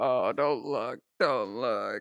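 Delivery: put-on muffled voice. Speaker acts out hiding in a hoodie; imitating a muffled voice. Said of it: "hiding in it and muffling my voice".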